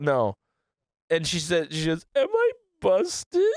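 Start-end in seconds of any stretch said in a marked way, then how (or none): 2.2-3.4 mock very high, sobbing, drunk crying voice. Quoting what a woman said, imitating a drunk crying person. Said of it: "doing a really good job of sounding like a drunk crying person".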